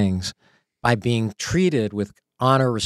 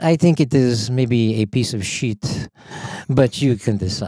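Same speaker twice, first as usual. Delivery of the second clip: slow imitated French accent. Retelling what a French colleague said in a pitch: imitating a French accent. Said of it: "he was French".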